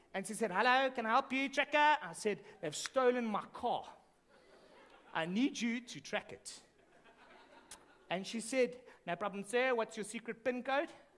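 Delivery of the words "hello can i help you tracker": put-on heavy, thick Johannesburg accent. Acting out the lady who answered your call about a stolen car, in a thick Joburg accent. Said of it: "spoke with a thick Joburg accent".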